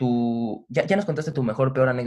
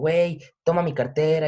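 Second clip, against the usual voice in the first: hollered, loud shouting voice; 3 semitones higher than usual. Retelling how you shouted at your best friend while lying vomiting by a car, retelling a yell. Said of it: "y le gritaba a mi mejor amigo".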